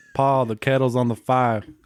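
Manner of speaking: weak, unconvincing, bad fake Southern accent. After a co-host tries the line, the other attempts it in a bad Southern accent. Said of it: "Can you do a good Southern accent?".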